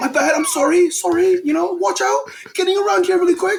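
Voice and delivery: fake British accent, very high-pitched. An American acting out moving through people on a train; put-on British accent. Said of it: "say it in a British accent".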